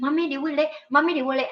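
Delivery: put-on crying child's tearful voice. Retelling how the daughter repeats a question on the train: imitating a crying child. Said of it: "she start crying".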